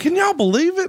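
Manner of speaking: thrilled, bursting excitement, high, swooping delivery. Retelling a happy announcement, imitating Sandy Scott's excited voice. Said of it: "the way he waved that paper, he's like".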